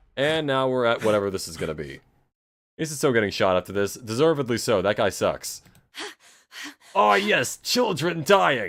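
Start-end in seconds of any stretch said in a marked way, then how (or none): 6.9-8.7 put-on gleeful villain voice, mock glee. Mocking a villain in the game by imitating how he sounds: mock glee. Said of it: "That's what he sounds like".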